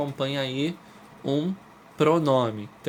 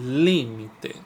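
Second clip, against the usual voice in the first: li of límite hit hardest, first-syllable stress. Lesson analysing the word límite and its syllables: stress on first syllable li. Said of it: "O li é a mais forte, é a tônica".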